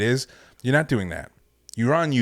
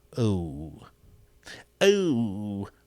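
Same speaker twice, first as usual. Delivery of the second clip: put-on old-time villain voice, long drawn-out oh. Speaker closing encouragement to a listener, in a 1950s villain voice. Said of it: "why did I sound like a, a villain from the nineteen fifties".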